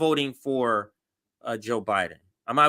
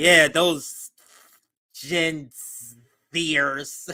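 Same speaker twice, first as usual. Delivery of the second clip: mock scornful, angry, slow, disdainful drawl. Retelling a caller's words about younger voters: imitating a disdainful tone. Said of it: "the anger in her voice, the disdain. She's like".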